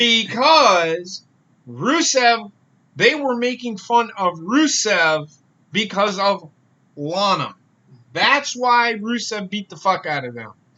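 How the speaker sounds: very slow, word-by-word. Explaining a point again to the other speakers: speaking as slowly as possible. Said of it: "I'm trying to say this as slowly as I can".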